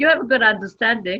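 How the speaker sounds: quick, loud laughing speech.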